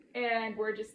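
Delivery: normal talking voice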